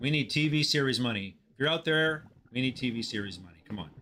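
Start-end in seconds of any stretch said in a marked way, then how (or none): none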